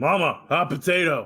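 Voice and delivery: shouting giant voice. Game master voices a stone giant calling across to another giant, hollering across. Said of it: "You hear him holler across".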